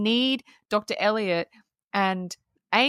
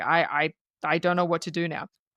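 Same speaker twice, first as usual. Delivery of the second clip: put-on frazzled man voice, lower pitch; 4 semitones lower than usual. Retelling a story about a man refusing an expedition, imitating a frazzled man. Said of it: "he's just he's frazzled".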